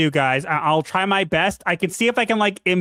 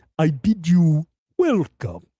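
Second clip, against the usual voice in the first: aged vampire count voice; 2 semitones lower than usual. Told they should be a voice actor, the speaker repeats the line as a Bela Lugosi impression. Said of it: "why did I hear Bela Lugosi?".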